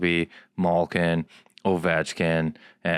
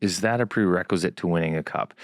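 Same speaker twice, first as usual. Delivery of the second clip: normal talking voice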